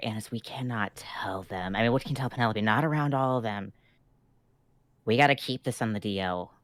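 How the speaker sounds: hushed whisper. Voicing a character pulling Anise aside to tell her privately: whispering in character. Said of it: "whispering to her".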